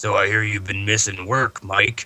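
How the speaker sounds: put-on gravelly voice. Retelling greeting someone from work while in costume: gravelly Boba Fett voice. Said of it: "I talk to him like a gravelly voice".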